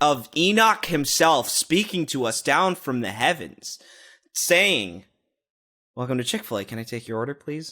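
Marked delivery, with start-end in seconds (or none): 6.0-7.7 crystal clear, soft, quick delivery. Retelling the greeting from someone taking orders with an iPad, imitating a very clear voice. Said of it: "in the clearest voice".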